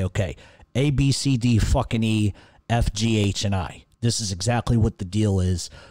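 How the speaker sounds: ordinary talk, nothing marked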